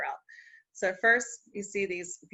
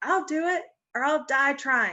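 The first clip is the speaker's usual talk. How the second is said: small, high, slow little voice; 7 semitones higher than usual. A storyteller voices the tiny Muskrat speaking up to the worried critters, teeny tiny voice. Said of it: "this teeny tiny little voice".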